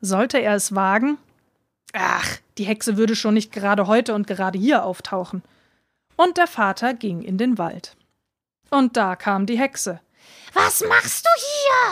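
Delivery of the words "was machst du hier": piercing, very high-pitched, shrill witch shriek. The witch comes upon the father in the woods, shrieking. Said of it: "kreischte sie".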